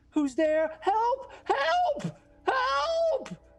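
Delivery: very high crying wails, stretched out and rising. A game master voices people in other doorways, screaming cries for help. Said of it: "a cacophonous series of cries for help".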